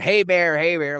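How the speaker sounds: loud, play-acted hollering yell. Retelling how a woman yelled at a bear to scare it away: imitating someone yelling. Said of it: "She starts yelling".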